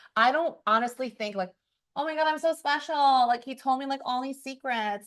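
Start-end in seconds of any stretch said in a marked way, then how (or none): 1.9-5.0 put-on nasal voice, higher. Acting out a date who feels special being told secrets: imitating someone in a nasal voice. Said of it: "you don't have to use the nasal voice".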